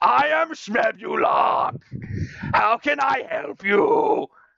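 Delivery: sudden, very high gnome voice calling out. A game master voices a gnome suddenly appearing to a player, shouting at the top of his lungs. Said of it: "is shouting at the like the top of the lungs".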